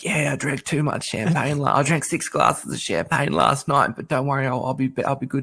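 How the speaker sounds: put-on croaky voice. Retelling a woman's answer when asked why her voice was coarse, imitating a croaky voice. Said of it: "she's got this croaky voice, and she goes".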